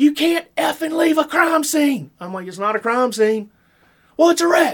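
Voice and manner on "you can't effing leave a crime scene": play-acted, very high-pitched, angry shrieking outburst. Retelling how a guy at a car wreck screamed at them, imitating someone screaming. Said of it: "this guy just screams at me".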